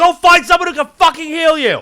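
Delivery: very loud, very high, shrill all-out shout. Arguing with a cleric who wants healing, yelling. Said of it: "it's even hard to yell now".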